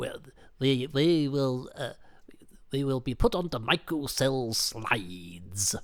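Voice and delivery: hissing sibilant voice, drawn-out s's and slides. Doing an impression after signing off, in a commander from the Ark impression. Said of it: "into the commander from the Ark there, who is who is almost as sibilant".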